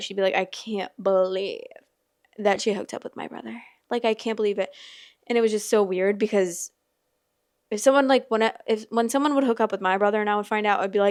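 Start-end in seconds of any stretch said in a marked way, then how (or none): 0.3-4.7 put-on upset voice. Retelling how a schoolmate reacted to news about her brother: imitating someone upset. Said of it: "so upset".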